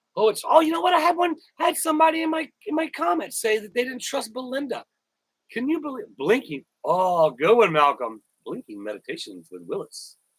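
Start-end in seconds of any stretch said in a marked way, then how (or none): 0.2-4.9 very high, mocking put-on voice. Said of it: "they're gonna be like".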